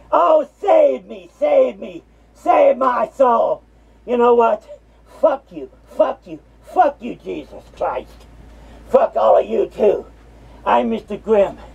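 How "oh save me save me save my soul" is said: put-on slow, drawn-out, pleading delivery. Mocking a listener who may be praying to God: mocking someone's pleading prayer. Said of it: "you praying to God?".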